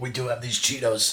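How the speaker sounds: fake raspy smoker's voice. Mentioning the Cheetos they have for the episode, in a fake smoker's voice. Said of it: "That was such a smoker's voice".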